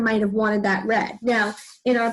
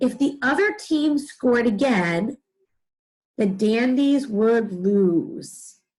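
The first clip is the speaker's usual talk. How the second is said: slow measured delivery with brief pause. Reading a practice sentence aloud together, pausing at the comma. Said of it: "we give ourselves a small pause".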